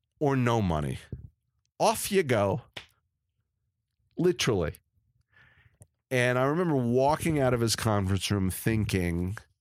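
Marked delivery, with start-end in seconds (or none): 0.2-2.6 condescending, pejorative, dismissive tone. Retelling what was said in a conference room: imitating a pejorative tone. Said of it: "in the most pejorative way possible".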